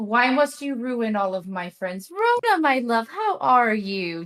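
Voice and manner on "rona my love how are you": very sweet, gentle motherly voice, swooping. The speaker shows how a character greets Rona: very sweet and motherly. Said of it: "very sweet and motherly".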